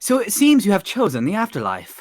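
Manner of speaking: laid-on put-on British accent. Speaking lines in a put-on voice to the group: put-on british accent. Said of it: "why are you speaking like that?".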